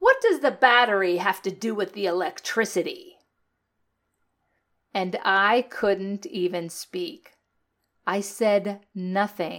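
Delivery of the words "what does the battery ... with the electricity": fast, put-on contemptuous, disgusted disbelief. Retelling what one of his brothers said to him: mimicking a disgusted tone. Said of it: "in the most disgusting tone possible".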